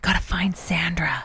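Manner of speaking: hushed, secretive whisper. Retelling a pretend forest search with a child: imitating a whisper. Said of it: "And we're whispering".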